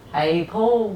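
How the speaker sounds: Liverpool, Scouse accent. Showing how to get into a Liverpool accent: Liverpool accent. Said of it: "how to get into a Liverpool accent, you just go".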